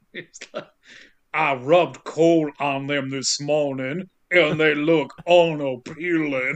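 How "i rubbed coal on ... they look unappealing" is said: put-on unconvincing Southern accent. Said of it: "in a really unconvincing Southern accent".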